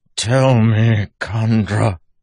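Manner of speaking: hoarse, breaking, very loud. A man holding a corpse after shouting, voice cracking and rough. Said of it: "voice cracking and rough from his shouting".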